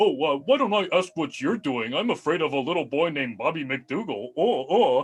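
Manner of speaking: mocking, derisive, parodying put-on voice. Voicing a creature imitating Constable Bippers to roast him: mocking imitation of Constable Bippers. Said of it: "imitate Constable Bippers and sort of takes on the form of him".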